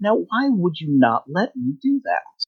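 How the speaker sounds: mildly sweet, sing-song creature voice. Voicing a creature that leaps at the player, the speaker uses a slightly sweet voice. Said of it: "a slightly sweet sounding voice".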